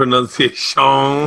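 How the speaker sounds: put-on Cajun accent. Saying a word while being corrected on its pronunciation; Cajun Man accent. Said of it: "You're doing the Adam Sandler, Cajun man".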